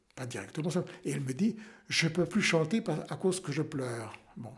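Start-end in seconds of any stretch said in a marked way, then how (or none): none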